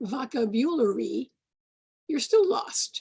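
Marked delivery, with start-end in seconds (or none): 0.0-1.3 the word vocabulary with stress on the wrong syllable. Illustrating a stress error that loses listeners: unusual stress on vocabulary. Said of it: "if I don't get the stress right and I say vocabulary".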